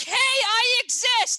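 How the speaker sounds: full-throated, very loud, high-pitched scream. Voicing people finally speaking up online, screaming. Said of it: "Sorry for screaming".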